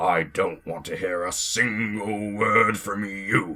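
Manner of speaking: grumbled words. The engine Gordon answers Thomas's teasing, grumbling.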